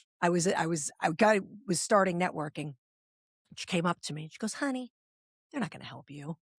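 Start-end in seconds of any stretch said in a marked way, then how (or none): 4.5-6.4 hushed, very soft, slight Southern drawl. Retelling what a woman at a networking luncheon said: imitating a slight Southern accent. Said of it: "a cute little blonde, little Southern accent".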